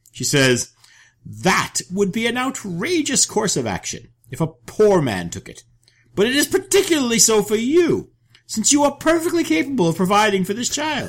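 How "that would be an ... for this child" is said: put-on very high, crazed, mad old woman voice. Reading a saga wife's protest to her husband: voice like a mad old woman. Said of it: "What is that voice? It sounds like a mad old woman".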